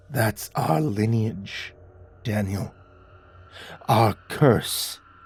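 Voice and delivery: low, trembling, quivering whispered voice. Narrator reads a character finally speaking to the narrator; quivering whisper. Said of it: "he finally whispered in a quivering voice".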